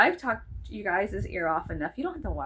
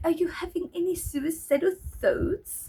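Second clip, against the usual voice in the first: put-on light, vaguely French accent, pitched higher; 8 semitones higher than usual. Retelling a psychiatrist's phone call, imitating his French-sounding accent. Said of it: "it sounds kind of French to me".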